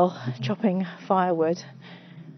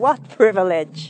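loud put-on drag queen voice; 6 dB louder than usual. Describing a walk past boats, exclaiming in a drag queen voice. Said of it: "I always think in that drag queen's voice".

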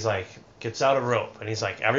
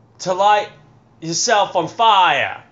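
English street performer impression, higher and louder; 8 semitones higher, 9 dB louder than usual. Doing an impression of a street performer after being asked: imitating an English street performer. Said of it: "Do the impression of him".

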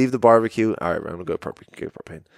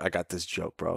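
smug, cocky delivery, very hushed; 4 semitones lower, 12 dB quieter than usual. Retelling how a friend bragged about a joke: imitating a cocky friend. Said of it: "He was so cocky".

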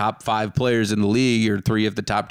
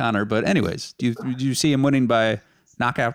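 plain

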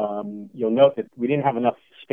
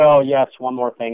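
put-on slightly disdainful tone, louder; 6 dB louder than usual. Retelling what the branch chief said at a meeting: imitating a little disdain. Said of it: "almost with a little disdain".

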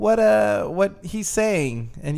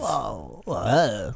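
low, whoa-style voice. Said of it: "That's what you sound like".

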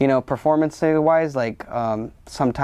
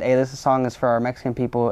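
normal talking voice

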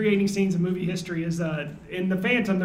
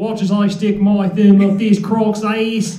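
poorly done Australian accent; 8 dB louder than usual. The speaker shows how their Australian accent turns into Kentucky: bad Australian accent. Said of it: "my Australian accent that turns into the southeastern Kentucky".

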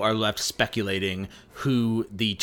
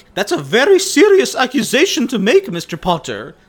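loud, bad French accent with swooping pitch; 13 semitones higher, 10 dB louder than usual. Recapping the story, quoting McGonagall's reply: bad McGonagall accent. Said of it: "a little French".

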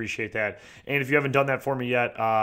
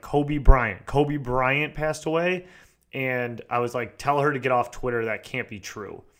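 ordinary delivery

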